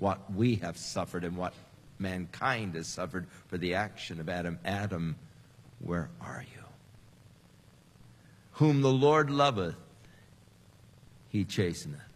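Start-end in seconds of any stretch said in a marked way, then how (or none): 4.6-6.6 acted sob, lower pitch and quieter. Preaching on Adam's transgression, calling out to Adam with a put-on sob in the voice. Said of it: "hear the sob in the voice".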